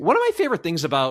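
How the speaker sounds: quick delivery, voice breaking mid-phrase. Talking about loving reading manga, voice cracking. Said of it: "a little voice crack there".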